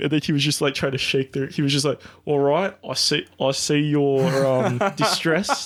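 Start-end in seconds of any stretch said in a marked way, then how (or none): 2.3-5.7 slow, calm, drawn-out placating reassurance. Retelling how the prime minister answered protesters: ScoMo accent. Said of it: "That's my ScoMo accent".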